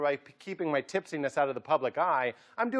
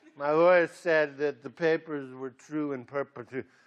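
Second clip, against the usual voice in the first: mock purring voice, much lower pitch; 5 semitones lower than usual. Mocking how Top Heavy said perpetuity, imitating Top Heavy's purring. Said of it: "he sounded like a cat purring".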